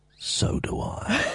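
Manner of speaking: soft, secretive whisper, very close. Recalling how he knelt down and whispered in the speaker's ear, retelling a whisper. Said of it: "he whispered in my ear".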